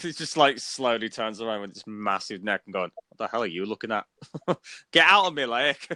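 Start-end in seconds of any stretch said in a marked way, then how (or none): 3.1-5.9 strong put-on Scottish brogue, very heavy and thick. Voicing a plesiosaur in an imagined scene, snapping at an onlooker: very heavy scottish accent. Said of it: "Comes across with his very heavy Scottish accent".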